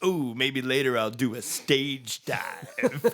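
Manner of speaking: put-on old rocker voice. Retelling what an old rocker said at a show: imitating an old rocker. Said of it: "that's exactly how he said it".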